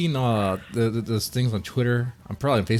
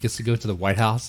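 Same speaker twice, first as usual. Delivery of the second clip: ordinary delivery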